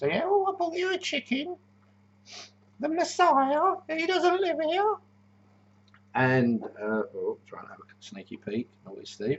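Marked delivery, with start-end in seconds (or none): 0.2-5.0 very high, silly sketch-comedy woman voice. Quoting a woman, done in a Monty Python character voice. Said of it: "it's better if I do that voice".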